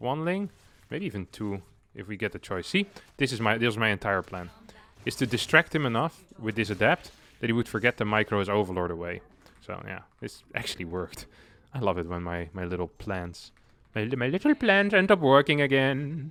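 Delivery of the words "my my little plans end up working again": cartoonish bad German accent, high and swooping. Commenting on a plan that worked in a game, bad Phineas and Ferb German accent. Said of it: "It's a worst German accent".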